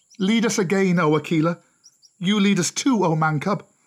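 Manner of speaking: high crying-out call. The gathered wolf pack calls to their old leader and the man cub: crying out. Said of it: "they cried".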